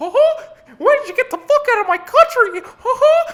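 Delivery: very high, loud cartoon squeaky voice. Mocking a woman from a watched video: imitating her in a Mickey Mouse voice. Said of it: "she sounds like fucking Mickey Mouse".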